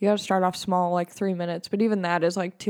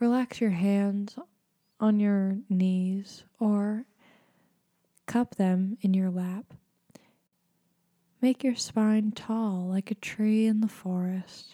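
slow, whispered, calm meditation guide voice. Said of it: "I'm gonna use my meditation voice".

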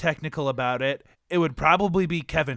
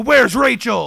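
very loud, high-pitched, shouted superhero voice; 6 semitones higher, 9 dB louder than usual.

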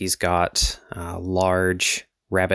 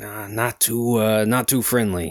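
slightly gruffer put-on voice; 3 semitones higher than usual. Speaker imitates what a man said in reply, in a bit gruffer voice. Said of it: "he had a bit gruffer voice".

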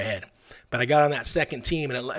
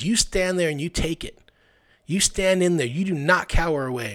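intimidating coach voice, higher; 4 semitones higher than usual. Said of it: "His voice was intimidating".

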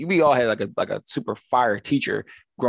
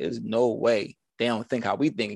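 ordinary talk, nothing marked

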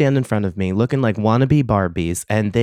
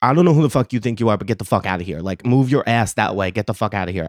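mock-aggressive outburst, faster. Retelling telling off a woman, imitating an aggressive outburst. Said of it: "aggressive real quick I looked at her".

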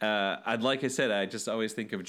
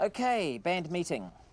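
put-on New Zealand accent; 9 semitones higher than usual. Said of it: "think of Murray from Flight of the Conchords".

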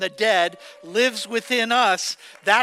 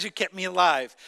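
usual speaking voice

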